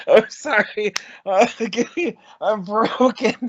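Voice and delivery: breathless laughter while talking. Apologizing to the other speaker mid-joke, laughing hard while talking. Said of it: "My stomach hurts so fucking bad".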